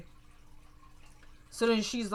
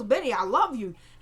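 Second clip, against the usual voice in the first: normal talking voice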